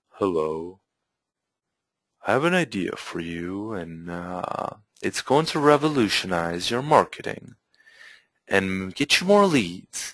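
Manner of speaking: very quiet, powerless, low-energy delivery with no drive. Showing how not to deliver a pitch, flat, low-energy delivery. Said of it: "deliver that with a little bit more power".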